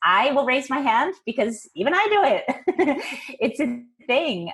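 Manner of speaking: laughing lightly through words. Talking to entrepreneurs about rambling, admitting they do it too, chuckling.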